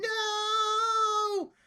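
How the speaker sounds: very high-pitched, drawn-out, stretched yell. As the players rush an attacker, the one down here starts shouting, shouting no. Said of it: "starts shouting".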